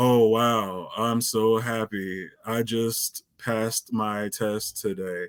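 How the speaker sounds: deadpan, flat, unconvincing cheerful delivery. Showing a listener an unbelievable line reading: unconvincing fake happiness. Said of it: "Did you believe me there?".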